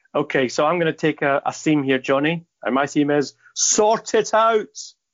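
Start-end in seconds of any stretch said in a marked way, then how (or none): 3.5-4.7 high-pitched shout, rising and building as it goes. [name] gives his serious theme to Johnny, shouting. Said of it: "Sorry for shouting".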